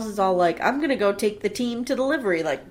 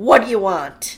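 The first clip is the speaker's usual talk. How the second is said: mock aggressive rude tone, louder; 6 dB louder than usual. Retelling a waiter taking an order: imitating aggressive order taking. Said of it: "he does the most aggressive order taking".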